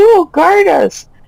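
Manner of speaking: high screaming voices. Voicing panicked nobles as guards are taken: nobles screaming. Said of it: "you hear the nobles screaming".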